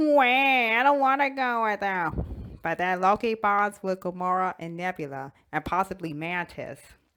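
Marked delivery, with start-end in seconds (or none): 0.0-2.6 slow, high whiny voice. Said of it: "Loki's like".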